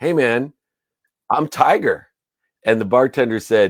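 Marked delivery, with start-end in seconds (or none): 0.0-2.1 high, slow, stunned and disbelieving tone. Retelling a reply to a bartender asking for ID: imitating someone in shock. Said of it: "looks at him in shock".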